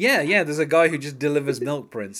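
play-acted sarcastic tone. Joking about prince, voicing his staff answering him; mock-sarcastic retold line. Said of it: "They're saying it sarcastically".

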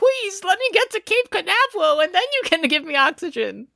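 very high, desperate, begging voice. Retelling a scene where a character begs for his life: imitating begging for life. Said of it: "He starts begging for his life".

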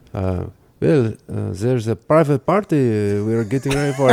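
put-on French accent in English. Retelling a story, quoting the woman who answered them, French accent. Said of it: "that was a French accent".

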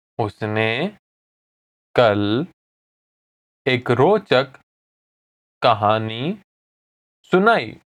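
deliberately slowed, halting, broken into pieces. Hindi lesson, repeating an example sentence again for learners; speaking slowly. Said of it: "I'll say it again slowly".

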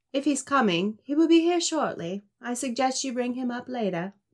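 very bad, clumsy, fake British accent. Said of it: "that was my very bad British accent".

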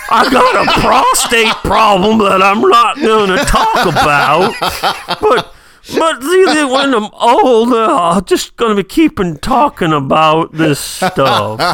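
put-on old-timer Southern drawl, slow and drawn out. Showing how being old means talking Southern: put-on old Southern accent. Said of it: "you're Southern like this".

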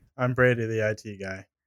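resigned, defeated, deflated, beaten-down delivery. Introducing himself as the it guy in the podcast intro, defeated. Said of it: "You sounded so defeated".

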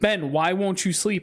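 acted, high, frustrated, exasperated pleading voice. Speaker retells calling out to Ben while not paying attention, retelling a loud remark. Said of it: "I loudly was like".

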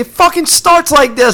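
mock very high-pitched, ranting freak-out. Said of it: "he starts going off".

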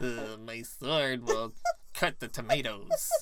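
put-on croaky voice. Speaker talking about Soul Calibur quotes a character's line, Siegfried frog-in-throat voice. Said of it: "sound still like he had a frog in his throat".

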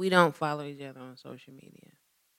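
hushed, soft half-whisper, barely audible. Answering the host's question about social media: half-whispering. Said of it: "Stop whispering".

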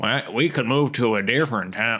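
lilting, nagging sing-song voice. Imitating a voice actor's cat: sing-song naggy Phil Hartman voice. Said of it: "sing-song, naggy thing going on where he's like".

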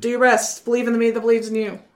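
cross, heated delivery. A tabletop player voices their character's line to the party, said angrily. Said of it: "I say it angrily".

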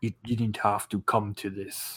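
mumbling low. A beaten enemy, hit a few times, speaks to his attacker, muttering. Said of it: "he just mutters to you".

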